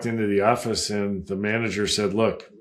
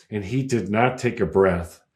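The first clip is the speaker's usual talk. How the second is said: ordinary talk, nothing marked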